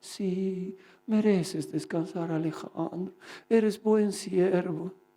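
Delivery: tender, honeyed, sweet, gentle little coaxing voice. Retelling a night he meant to read the Bible, the speaker imitates a sweet little voice. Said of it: "Qué bonita me hablaba. Dulce".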